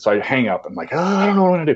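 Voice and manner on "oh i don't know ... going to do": very high, put-on flustered, panicky voice. Retelling a failed calling-card call, acting out own panic. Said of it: "So I'm like kind of panicky".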